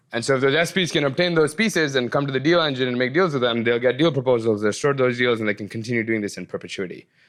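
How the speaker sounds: rapid-fire run, rattled off very fast with no pauses. Explaining a technical process to the audience, really fast without pausing. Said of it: "I said that really fast without breaking for effect".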